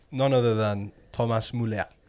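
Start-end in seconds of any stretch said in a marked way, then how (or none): 1.1-1.8 put-on French accent. Announcing a name after 'none other than', in a french accent. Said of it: "I don't know why I said that in a French accent".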